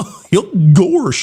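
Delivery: silly, cartoon-character voice. A speaker offers the best cartoon impression he can manage: Goofy voice. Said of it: "Best Goofy I've got would be something like".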